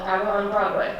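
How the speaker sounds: plain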